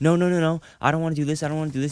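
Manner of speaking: put-on panicked, frantic, freaking-out child's voice. Retelling a younger brother freaking out before a blood draw: imitating a panicked child. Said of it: "he just started freaking out".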